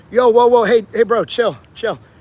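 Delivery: calming, defusing, laid-back soothing tone. Showing a common technique to calm a confrontation: defusing a confrontation. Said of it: "always diffuse".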